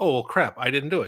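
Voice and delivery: ordinary talk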